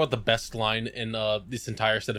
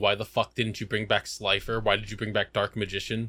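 ordinary delivery

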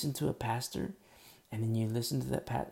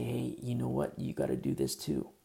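put-on tempting whisper. Preaching on Leviticus, voicing Satan luring believers: imitating Satan whispering. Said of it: "he'll whisper in your ear and say".

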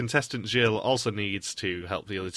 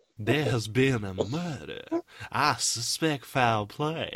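put-on Southern accent, detective character voice; 3 semitones higher than usual. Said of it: "Why do you sound like Daniel Craig from Knives Out?".

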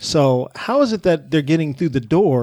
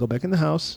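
calm, even, restrained tone, quieter; 2 semitones higher, 6 dB quieter than usual. Retelling what you said while hiding your fury, retelling a calm restrained tone. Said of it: "Same tone of voice".

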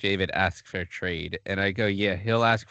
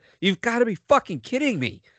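play-acted shrill outburst, very high and loud; 5 dB louder than usual. Recalling seeing a hockey video on Facebook, retelling a loud yell. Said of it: "audibly yelled out loud".

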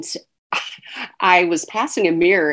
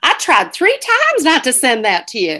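put-on animated Southern woman's accent, raised and swooping; 7 semitones higher, 5 dB louder than usual. Quoting a woman's email aloud, in Carol's Southern accent. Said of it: "I'm going to say it like Carol because she's Southern".

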